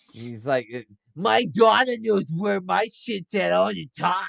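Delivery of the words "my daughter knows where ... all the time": crotchety, grumpy, rough, loud and high. Pitching a grumpy waitress character quoting her family, imitating a crotchety grump. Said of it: "like that type of crotchety".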